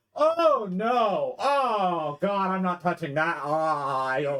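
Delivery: alarmed, dismayed recoil, high, long drawn-out "oh". Voicing a character who wilts on grabbing an artifact: wilting in alarm. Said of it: "you just watch him wilt a bit".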